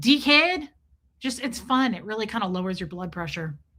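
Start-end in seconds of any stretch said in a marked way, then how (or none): 0.0-0.7 put-on, pitched-up Australian accent. Showing listeners how to say the word: Australian accent. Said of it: "Say it in Australian".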